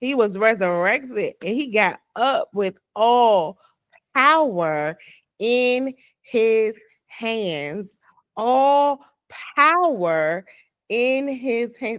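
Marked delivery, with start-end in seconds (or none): 9.6-10.4 the word 'power' stressed. Repeating the phrase to listeners, with emphasis on 'power'. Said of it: "Emphasis on power".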